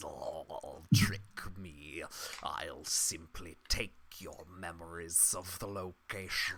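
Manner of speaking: furious creature growl, very low and very soft. Telling a story, speaking as the creature who was tricked, angry growling creature voice. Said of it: "a growl of anger, and the creature says".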